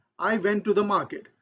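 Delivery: ordinary talk, nothing marked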